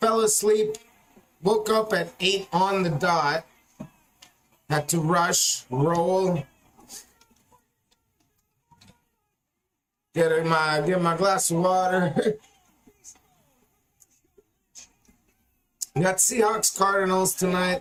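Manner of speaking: sleep-roughened, rough just-woke-up voice. Welcoming everyone before tonight's game after a nap, rough just-woke-up voice. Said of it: "my voice is a little rough right now".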